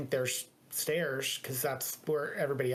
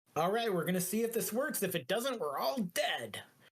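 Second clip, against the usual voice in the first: put-on pitched-up, half-mad, half-crazed old man voice; 6 semitones higher than usual. Voicing a voice heard in a character's head: old half-crazed male voice. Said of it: "old, half-crazed male voice".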